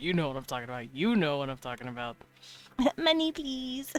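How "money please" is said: put-on very high, grating, annoying, spoiled rich-girl pleading. Describing a type of voice to listeners, the speaker demonstrates an annoying rich girl voice. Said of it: "annoying uh, rich girl voice".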